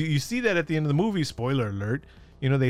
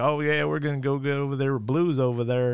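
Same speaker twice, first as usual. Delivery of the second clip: put-on cowboy accent. Reviewing a Jurassic World movie, the speaker mocks Owen's sudden accent: Owen's cowboy accent. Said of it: "where'd he get that cowboy accent".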